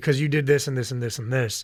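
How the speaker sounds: plain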